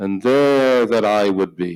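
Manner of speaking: ordinary delivery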